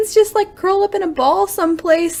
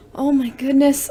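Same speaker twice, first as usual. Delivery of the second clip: plain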